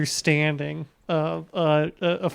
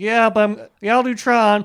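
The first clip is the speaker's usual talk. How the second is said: put-on laid-back voice, higher and louder; 5 semitones higher, 5 dB louder than usual. Imitating an actor agreeing to do a film: Jeff Bridges impression, slightly louder.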